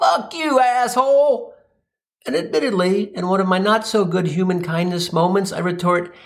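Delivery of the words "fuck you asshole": abrupt, hostile, pitched-up acted shout. Retelling what a man yelled at him as the light changed, imitating someone yelling. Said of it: "At which point he yells".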